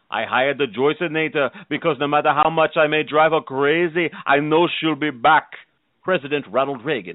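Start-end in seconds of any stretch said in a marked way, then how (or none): 0.1-5.5 put-on voice with Austrian accent. Endorsing a coach as a celebrity: Arnold Schwarzenegger impression. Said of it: "Arnold Schwarzenegger".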